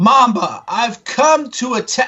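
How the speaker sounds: high, drawn-out yell, way up high. Voicing a character who pushes open the door, yelling. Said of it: "he sort of yells".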